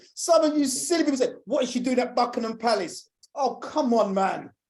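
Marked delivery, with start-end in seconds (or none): none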